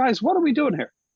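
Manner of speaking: loud, high projecting voice. Retelling a neighbor's words at a parlor meeting: imitating Steve Cantor. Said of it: "I'm doing a pretty good imitation of him".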